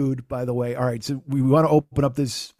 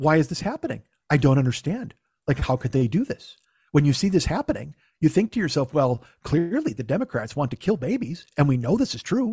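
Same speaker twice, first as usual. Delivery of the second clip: put-on teenage-girl speaking style. Speaker mocking how a man talks, imitating a teenage girl's talk. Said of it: "he talks like a teenage girl half the time".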